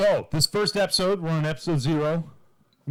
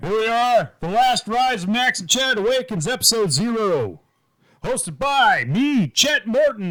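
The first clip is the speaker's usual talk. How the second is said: put-on sexy comedian voice, higher and louder; 8 semitones higher, 6 dB louder than usual. Opening the episode and introducing the hosts: sexy Ray Romano voice. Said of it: "in my sexy Ray Romano voice".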